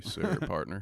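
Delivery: bad put-on movie cowboy voice. Showing a friend the voice you are still working on, bad Sam Elliott voice. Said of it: "I'm working on my voice".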